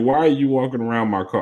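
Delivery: normal talking voice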